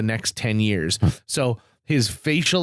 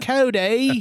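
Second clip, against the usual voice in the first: put-on Australian accent; 11 semitones higher than usual. Retelling a woman calling out the name cody, australian accent. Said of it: "she's got like that Australian, like".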